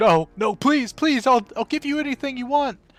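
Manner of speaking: shrill, very high, very loud, rushed screaming. Narrator voices a soldier seized by the Minotaur, screaming. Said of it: "the soldier is like screaming".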